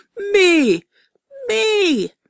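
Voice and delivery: very high, loud, swooping yell. Narrator reads a character shouting while wrestling for the Farnsworth: shouting.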